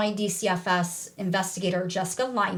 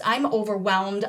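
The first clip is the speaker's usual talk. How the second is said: ordinary talk, nothing marked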